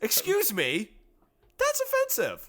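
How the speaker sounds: voice jumping way up, very high and swooping. Teased as a husky choir boy, he objects; high-pitched voice. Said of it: "see how high his voice got there?".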